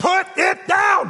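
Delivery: high-pitched, slow, furious shouting.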